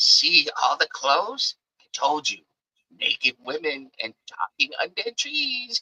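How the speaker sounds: hushed, half-whispered aside. Voicing a character who half-whispers in another character's ear: Strock half-whispering. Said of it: "whispers in his ear".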